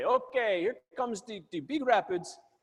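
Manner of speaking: put-on Jamaican-style accent. Retelling what the rafting guide said before every rapid; imitating Costa's Jamaican-sounding accent. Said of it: "but he sounds Jamaican".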